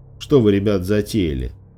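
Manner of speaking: ordinary delivery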